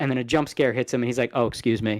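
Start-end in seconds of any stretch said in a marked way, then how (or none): 1.3-2.0 mock put-out, inconvenienced politeness, lower pitch. Retelling a gamer's reaction to a jump scare, imitating someone inconvenienced. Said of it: "like the jump scare inconvenienced his, him talking".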